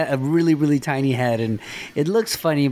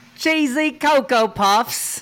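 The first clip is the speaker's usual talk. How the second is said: high-pitched put-on English accent; 10 semitones higher than usual. Trying out a requested bit for extra pay, in an English accent. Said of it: "say cheesy Coca Puffs in an English accent".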